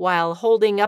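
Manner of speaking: plain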